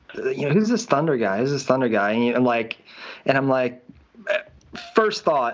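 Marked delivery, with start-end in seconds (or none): none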